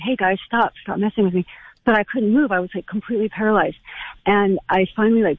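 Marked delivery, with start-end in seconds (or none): none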